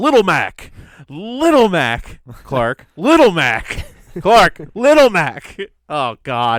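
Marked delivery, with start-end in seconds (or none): 0.0-5.6 loud, booming voice, each word slow. Retelling an eight Little Mac match, imitating the Switch announcer. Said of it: "you just hear the announcer on the Switch".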